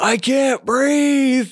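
high scream. Retelling how an arrested man screamed at the police: imitating someone screaming. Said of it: "he starts screaming".

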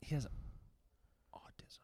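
hushed whisper. Talking about a cousin, the speaker whispers instead of speaking into the mic. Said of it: "Why are you whispering it?".

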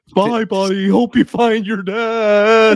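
silly, stupid put-on voice, high and very slow. Doing a practiced put-on voice: stupid put-on voice. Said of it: "came out really stupid".

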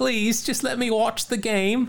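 high, pleading Cockney street-urchin voice. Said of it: "Probably speaking with a Cockney accent".

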